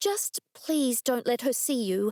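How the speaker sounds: earnest, imploring, begging tone. Reading a story, a character asking detectives not to be seen: pleading. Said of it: "I pleaded".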